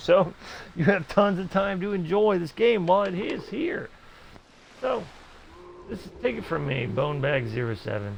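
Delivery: voice cracking and breaking mid-sentence. Telling viewers to enjoy the game without stress, voice cracking. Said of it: "I know my voice is cracking up".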